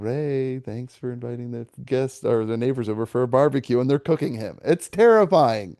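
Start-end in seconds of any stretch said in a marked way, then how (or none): 0.0-3.8 very serene, calm, placid hostess tone. Retelling a movie nightmare scene: imitating Carrie Fisher's serene voice. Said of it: "talking in, like, a very serene voice".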